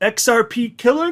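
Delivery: pitch climbs at the end of killer, question-like rise. Reading a crypto headline ending in a question mark: rising pitch on 'killer'. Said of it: "which is why my voice goes up like this".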